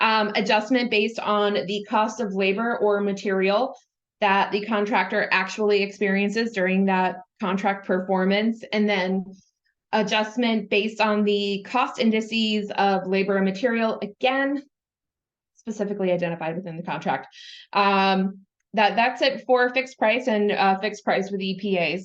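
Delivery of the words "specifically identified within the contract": fast, soft, rushed out in one breath. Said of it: "That was a lot to say in one breath".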